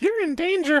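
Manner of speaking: put-on high cartoon child voice. Voicing Simba being horrified, done in a Ralph Wiggum voice. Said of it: "Ralph Wiggum from The Simpsons".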